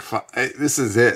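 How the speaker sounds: ordinary delivery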